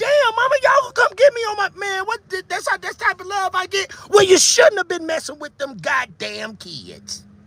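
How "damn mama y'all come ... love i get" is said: mock-outraged, furious, higher voice. Imagining his own reaction to his mama, mock furious outrage. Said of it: "I would have been madder than ten motherfuckers".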